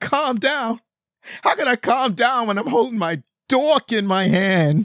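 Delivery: put-on very high, drawn-out sobbing, crying wail. Retelling Jocko's tearful reply to being told to calm down: imitating Jocko crying. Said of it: "and he starts to cry".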